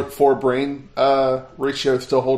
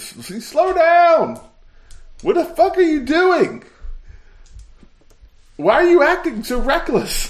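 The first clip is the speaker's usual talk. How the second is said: very high, shocked, swooping yell. A player, voicing Willem, calls out to Gogan: Willem yelling. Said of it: "And he yells to Gogan".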